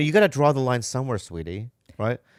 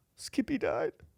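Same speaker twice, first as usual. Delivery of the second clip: mock tearful, whispered crying voice; 10 semitones higher, 9 dB quieter than usual. Retelling how a friend answered the door crying: imitating Frankie crying. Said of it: "and he's t-, crying".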